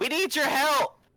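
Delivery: high-pitched screaming. Calling a wizard in for help in character, screaming out. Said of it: "I also scream out and be like".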